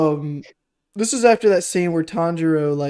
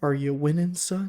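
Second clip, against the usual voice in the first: hushed, soft half-whisper, close and intimate; 8 dB quieter than usual. Retelling a film scene where a father leans over his sleeping son: imitating a half-whisper. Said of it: "he whispers in his ear".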